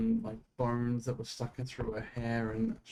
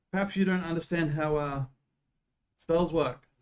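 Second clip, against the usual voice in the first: raised, pitched-up, loud yelling voice; 6 semitones higher, 6 dB louder than usual. Voicing a guard who leans over the wall: guard yelling down. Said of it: "leans over and yells down".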